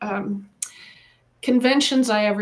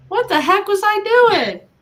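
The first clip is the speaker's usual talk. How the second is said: much higher, louder, exasperated, disbelieving outburst. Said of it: "It's like".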